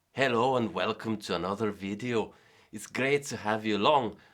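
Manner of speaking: poor put-on Scottish accent. Opening a video by welcoming viewers, in a crappy Scottish accent. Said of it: "my crappy Scottish accent".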